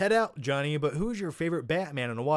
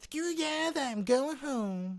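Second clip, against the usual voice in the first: very high-pitched cartoon boy voice; 11 semitones higher, 3 dB quieter than usual. Answering a viewer's question about South Park, Cartman impression. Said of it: "that's my Cartman impression".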